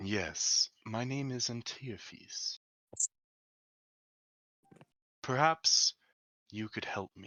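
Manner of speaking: soft, hushed whisper. Voicing a sentient being answering the players' question, whispering. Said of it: "She whispers to you".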